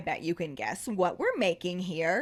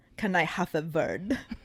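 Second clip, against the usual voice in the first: terrible, clumsy put-on Bulgarian accent; 2 semitones lower than usual. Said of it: "It's my terrible Bulgarian accent".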